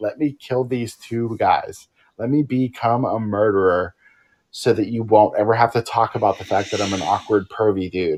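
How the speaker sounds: ordinary talk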